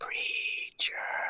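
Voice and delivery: soft, voiceless whisper.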